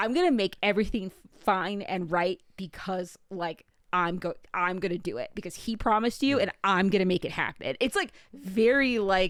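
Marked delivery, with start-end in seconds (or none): none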